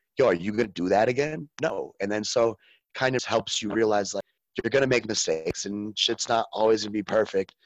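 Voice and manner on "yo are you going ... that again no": mock very aggressive delivery. Retelling how he was taught not to repeat a mistake, imitating a very aggressive tone. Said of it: "in a very aggressive".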